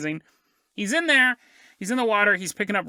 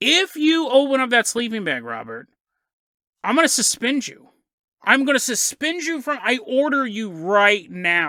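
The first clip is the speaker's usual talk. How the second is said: mock strict schoolteacher, stern threatening scolding, yelling; 2 semitones higher than usual. Retelling a teacher yelling at a student: imitating a teacher yelling. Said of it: "the teacher starts yelling at him".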